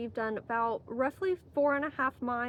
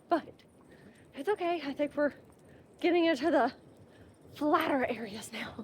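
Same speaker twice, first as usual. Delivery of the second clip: winded, out of breath, pitched higher; 3 semitones higher than usual. Hiker on a moderate trail just after climbing a section, out of breath. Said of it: "I'm still out of breath from it".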